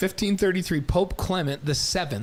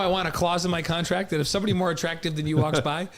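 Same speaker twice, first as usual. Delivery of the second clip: normal talking voice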